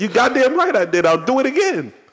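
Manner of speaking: very high-pitched, heated yelling. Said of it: "so you can stop yelling at us".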